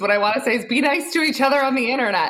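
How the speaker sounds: talking through laughter. Asked for a call to action, the guest answers laughing while speaking. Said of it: "Sorry, I'm laughing".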